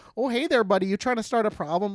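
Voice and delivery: put-on Minnesota-style Canadian accent. Mimicking Minnesotan people with the Canadian accent: Minnesotan Canadian accent. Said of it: "especially when they have the Canadian accent".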